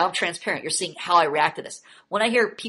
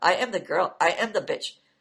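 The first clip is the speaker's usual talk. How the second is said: stiff, wooden, slow, amateurish bad acting. Retelling how the other speaker read a part: imitating terrible acting. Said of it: "you read it like".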